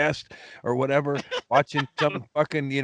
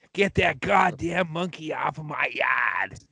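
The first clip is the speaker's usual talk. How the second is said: put-on cranky old lady voice. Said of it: "That lady was a".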